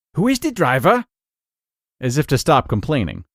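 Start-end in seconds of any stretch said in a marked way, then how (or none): 0.2-1.1 put-on German accent, pitched very high. Speaker quoting their father answering a remark about his driving; father's German accent. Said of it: "my father would say in his German accent".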